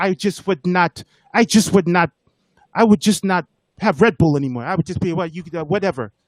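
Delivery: horrible, bad put-on French accent. Retelling a meeting, answering a question about Red Bull prices: horrible Victor impression. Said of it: "this is a horrible Victor impression".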